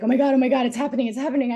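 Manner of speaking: loud, frantic, rushed, rattled-off panic. Retelling what a girl in the program said, imitating someone freaking out. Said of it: "she's freaking out".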